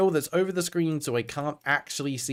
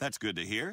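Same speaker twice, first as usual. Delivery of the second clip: sarcastic tone, meaning the opposite; 5 semitones lower, 9 dB quieter than usual. Voicing a game character's reply to the camp founder: sarcastic. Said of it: "I say sarcastically".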